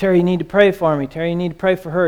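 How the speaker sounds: words tumbling out at breakneck, rushed speed. Retelling what a man said to terry at 4 a.m., talking way faster than normal. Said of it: "talking way faster than I talk on a good day".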